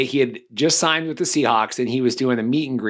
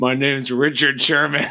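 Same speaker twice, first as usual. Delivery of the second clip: put-on angry, irritated voice. Retelling how Richard Sherman corrected his name: imitating Richard Sherman angrily. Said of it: "And he was so mad".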